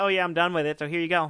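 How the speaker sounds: usual speaking voice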